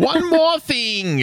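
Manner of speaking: very high-pitched cartoon character voice. Recalling the character's catchphrase: Uncle from Jackie Chan Adventures voice.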